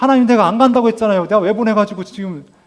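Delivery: high, loud, protesting, complaining outburst.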